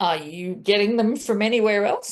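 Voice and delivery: put-on perplexed voice. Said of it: "in a quite perplexed voice".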